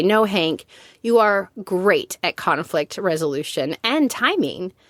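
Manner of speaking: ordinary talk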